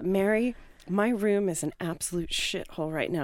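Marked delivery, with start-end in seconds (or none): none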